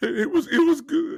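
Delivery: play-acted sniffling, tearful crying voice. Imitating an answer about breakfast while wiping tears: imitating Jerry Jones crying. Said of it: "I ain't never seen the man cry that much".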